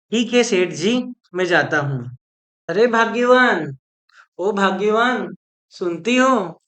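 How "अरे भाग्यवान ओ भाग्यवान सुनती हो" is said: calling out loudly. In a drama, a man calls out to a woman to come, shouting. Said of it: "क्यों चिल्ला रहे हो जी?".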